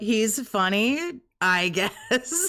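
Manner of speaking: very slow reluctant reply. Retelling a stream where Kat is asked her husband's best quality: imitating Kat's reluctant answer. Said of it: "she didn't know what the fuck to say".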